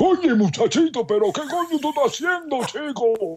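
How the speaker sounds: very high, excited Spanish sportscaster-style outburst. Retelling the Cuban grandfather freaking out: like a Telemundo soccer broadcaster. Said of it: "you just sounded like a soccer a broadcaster on Telemundo".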